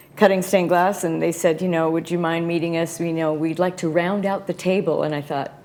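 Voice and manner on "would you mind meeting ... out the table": ordinary talk, nothing marked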